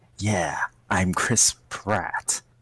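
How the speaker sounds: slow, whispered, scarred, mutated rat man voice. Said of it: "scarred, mutated rat man".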